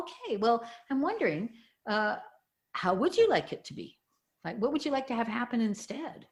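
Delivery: tone of genuine, wondering curiosity. Showing how to ask the question: curious tone of voice. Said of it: "a look of curiosity in your tone of voice".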